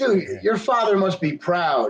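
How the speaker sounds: heavy, drawn-out sarcasm. Quoting the guy's line from a clip: imitating a very sarcastic remark. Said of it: "I say that as sarcastically as you possibly can".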